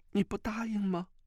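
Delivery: quavering, trembling voice, pitched very high. Narrator reads a character pressing a silent man for his answer; trembling voice. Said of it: "颤声道".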